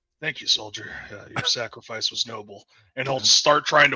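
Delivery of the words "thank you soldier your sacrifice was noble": soft, low whisper close into the ear. Kneeling by a soldier, a player's character speaks into his ear: whispering. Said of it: "kneel down and whisper in his ear and say".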